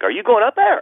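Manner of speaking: Pittsburgh lilt climbing through up there. Speaker shows the Pittsburgh inflection in their accent with a question, rising Pittsburgh question inflection. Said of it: "I'll ask a question and go up".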